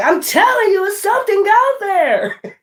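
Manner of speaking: very high, insistent, worried horror-movie woman voice. Acting out the woman in a horror movie: imitating a woman in a horror movie. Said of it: "And the woman be like".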